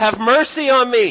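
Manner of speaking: put-on very loud, high, drawn-out desperate cry. Retelling a blind man's plea to Jesus: imitating a desperate plea. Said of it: "The desperation".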